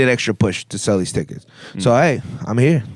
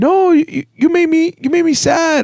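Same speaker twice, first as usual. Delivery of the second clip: very high, weepy, tearful sobbing voice; 3 dB louder than usual. Retelling a friend's phone call after the show: imitating someone crying. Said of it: "I couldn't believe she was crying".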